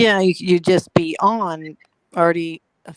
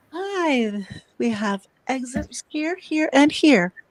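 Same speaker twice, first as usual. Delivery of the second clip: mock airline safety announcement voice, higher pitched; 4 semitones higher than usual. Joining the joke about a flight attendant's message: imitating a flight attendant announcement. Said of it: "airline stewardesses giving the message before takeoff".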